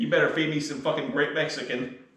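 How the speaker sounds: ordinary talk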